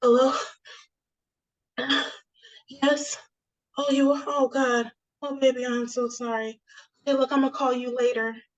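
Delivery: mock out of breath, panting, gasping for air. Retelling how her mother answered the phone: imitating mom out of breath. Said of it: "that trying to catch your breath, like she was running for miles type".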